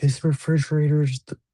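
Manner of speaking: high, loud, panicked crying wail. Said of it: "she's panicking, she's crying".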